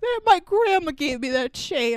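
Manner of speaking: put-on words drowned in blubbering sobs. Retelling how Red cries after his chain is taken: imitating Red bawling.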